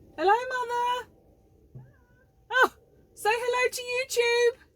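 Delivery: slow, very high, very loud, drawn-out shout. Calling out to the mother in the chicken run next door: shouting to someone next door. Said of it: "I was gonna shout".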